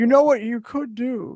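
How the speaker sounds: grand godlike voice, as if from the heavens. A voice from the sky offers the arguing group a suggestion, big booming voice. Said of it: "says a big booming voice from the sky".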